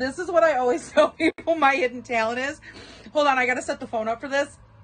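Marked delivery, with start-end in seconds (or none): 0.0-2.6 words squeezed out through tearful laughter, barely holding together. Speaker setting up the phone to show a hidden talent: laughing so hard crying. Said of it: "I'm laughing so hard I'm crying".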